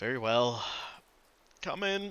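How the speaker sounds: speaking through a long sigh. Voicing a heartbroken character who lets visitors in: said with a long sigh. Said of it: "he lets out a long sigh, and he just goes".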